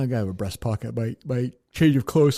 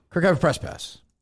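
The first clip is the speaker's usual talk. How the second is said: quick, rushed, rattled off really fast; 4 semitones higher than usual. Retrying the press-pass line as told to, said really fast. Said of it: "I don't really know if that was quick enough".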